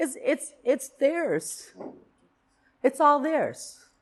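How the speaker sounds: on the edge of crying. A parent talking about their children, near tears. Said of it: "I'm going to cry. I'm sorry. I didn't think I'd get emotional".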